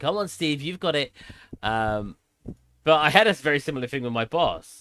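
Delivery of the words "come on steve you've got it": high, patronizing, teasing, jokingly condescending tone. Retelling a friend's joking encouragement: imitating a joking condescending tone. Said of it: "he jokingly was being condescending".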